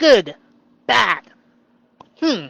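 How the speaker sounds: put-on loud baby talk, like a two-year-old. Joking about own small vocabulary: talking like a two-year-old. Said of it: "I'm like a two-year-old".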